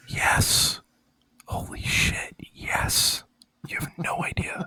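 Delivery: soft, breathy whisper under the breath. Gushing about Zelda games with another person, whispering. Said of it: "No more whispering".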